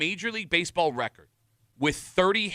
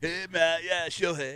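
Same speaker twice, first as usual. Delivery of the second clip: put-on California accent. Joking that the pitcher secretly speaks English: Ohtani with a California accent. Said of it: "he's probably got a California accent".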